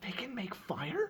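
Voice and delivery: very high, soft half-whisper. Speaking in character to another character, asking about the creatures: half-whispering. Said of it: "I'm whispering, I'm whispering to, to Max".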